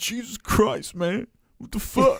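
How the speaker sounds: very high, fed-up, frustrated exclamation. Imitating a co-host getting annoyed on the podcast: imitating frustrated outburst. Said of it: "super frustrated and butthurt".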